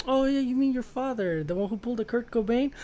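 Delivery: offhand cutting taunt. Retelling a scene from the book, imitating a nonchalant aggressive taunt. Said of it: "he's nonchalant, being super aggressive".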